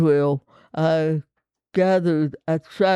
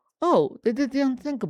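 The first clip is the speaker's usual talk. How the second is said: tongue-in-cheek, sarcastic, pitched-up delivery; 8 semitones higher, 3 dB quieter than usual. Answering own question about a scripture passage: sarcastic. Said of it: "And I'm being sarcastic".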